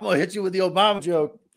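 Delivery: high-pitched, fast, laughing, mock-menacing delivery.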